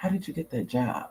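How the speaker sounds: soft, breathy whispered aside. Retelling what an extra on set asked: imitating someone whispering. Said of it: "she started whispering".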